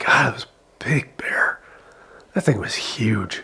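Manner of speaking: quiet muttering under the breath. As the dad coming in after seeing a bear, muttering under his breath. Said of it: "kind of muttering under his breath".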